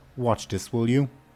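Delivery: firm, commanding tone brooking no disagreement. Voicing a character telling a soldier to watch something: commanding tone. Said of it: "her tone, like, brooks no disagreement".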